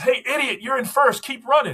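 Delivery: very high-pitched, loud shouted call. Retelling someone at the race calling out: imitating someone yelling. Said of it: "somebody yells".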